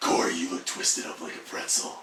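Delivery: put-on sultry, sexy superhero-style voice. Answering a request to describe a pose: sexy Batman voice. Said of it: "saying something else, sexy Batman?".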